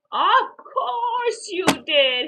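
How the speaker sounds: drawn-out amused chuckle. Narrator reads a dad answering his son Billy, chuckling. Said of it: "his dad chuckled".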